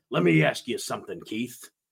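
low, unbothered, flat voice. Retelling how Jesse Ventura interviewed a wrestler: Jesse Ventura impression. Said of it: "He'd be like".

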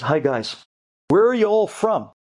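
put-on Brooklyn accent. Retelling what the house owner said on the roof: imitating a brooklyn accent. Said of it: "He was talking with a Brooklyn accent".

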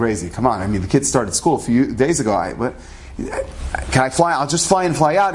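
ordinary talk, nothing marked

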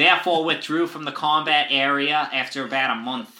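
Boston accent voice. Finishing reading a quote aloud: JFK voice. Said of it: "I'm just gonna finish as J F K".

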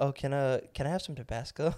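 prim, businesslike, very proper corporate politeness. Retelling a request to the waiter: imitating Jalen speaking very proper. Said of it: "he speaks very proper, very corporate".

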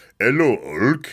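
put-on French accent on the words. Recalling the wrestling cartoon, doing Andre the Giant with a French accent. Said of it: "which is the perfect French accent right away".

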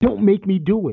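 angry, high-pitched screaming. Retell what a big man screamed on film while choking a young kid in public, imitating a man screaming.

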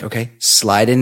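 ordinary talk

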